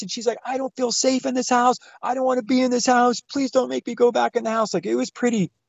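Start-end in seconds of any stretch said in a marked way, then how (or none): 0.4-4.7 frantic, desperate, pleading screaming. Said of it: "screaming at the top of her lungs".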